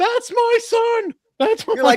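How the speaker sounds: very high, very loud, shrill, drawn-out mom cry. Retelling his mom watching from the other side: imitating his mom. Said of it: "She's like".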